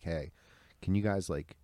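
imitated pleading, begging tone. Retelling how dad begged the cops during an arrest: imitating dad pleading. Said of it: "My dad's, like, pleading with him".

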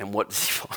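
whispered, breathy words broken up by laughter. Speaker telling a Bible story to listeners, laughing while speaking. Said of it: "I'm laughing because it's hilarious".

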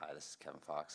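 put-on, deep radio announcer voice. Recalling how they once introduced themselves, putting on a radio announcer voice. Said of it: "I was trying to do my radio voice".

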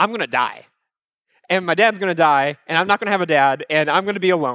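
ordinary delivery

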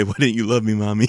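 put-on crying. Retelling a cartoon scene, quoting Big Shot: imitating Big Shot crying. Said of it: "he'll cry and say".

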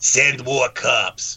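put-on New York Brooklyn accent, man's voice. Retelling how a zombie's original voice sounded in a film: Brooklyn accent. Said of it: "he sounds like he's from Brooklyn".

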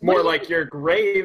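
high, loud, very slow, drawn-out yell. Voicing Finch answering a character in a cave: Finch yelling. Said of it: "Finch yells".

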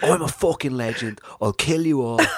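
mock Cockney man voice. Retelling a video of a man rowing with security guards: imitating a Cockney man. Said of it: "kinda like a Cockney geezer".

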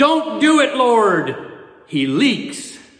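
sudden high-pitched shout. Retelling a joke where a woman in the congregation stands up: imitating a woman yelling. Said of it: "she stood up and yelled".

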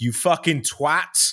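high-pitched put-on scream. Recounting screaming at a cyclist who hit them and rode off, retelling a scream. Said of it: "So I just screamed out".

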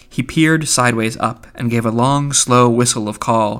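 ordinary delivery

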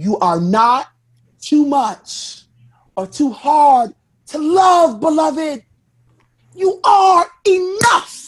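very slow, drawn-out, uplifting, inspirational delivery. Reading an uplifting quote when asked to do it as Iyanla Vanzant: Iyanla Vanzant impression. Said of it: "do that in a fashion of, uh, Iyanla Vanzant".

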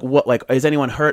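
normal talking voice

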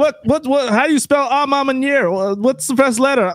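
high yell. Retelling what another person on the group call yelled: imitating Travis yelling. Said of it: "Travis yells out".

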